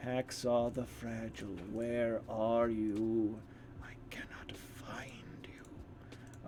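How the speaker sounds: eerie, slow, creepy whisper. Calling out for a missing player by name: creepy-sounding voice. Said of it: "that sounded very creepy, the way I said that".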